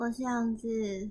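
tired, lifeless delivery. Introducing yourself at the start of a recorded episode, in a weak, listless voice. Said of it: "你不要这么有气无力的".

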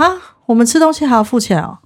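high, quick, put-on surprised cry of disbelief. Retelling someone's reaction on seeing the bill, acting out a surprised exclamation. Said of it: "他就惊呼".

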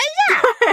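sudden cry out, very high. Recounting a story, the speaker imitates 梅哈 suddenly yelling: imitating 梅哈's sudden yell. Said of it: "是梅哈突然大叫说".

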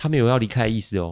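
ordinary delivery

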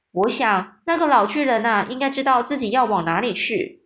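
plain reading voice

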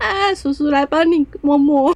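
put-on high-pitched baby-talk voice. Retelling how a man turns from normal talk to holding a cat, baby voice. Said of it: "变成娃娃音或高八度".

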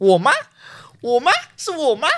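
very high, loud, swooping yell. Retelling the moment the pointing stopped on them, retelling a loud shout. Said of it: "我就说我我都很大声的喊说".

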